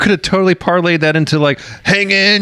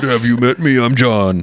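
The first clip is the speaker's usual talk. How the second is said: very low, put-on deep bass voice; 7 semitones lower than usual. Greeting Brad as the volcano named John's voice: John's voice. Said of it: "Hey, John's voice".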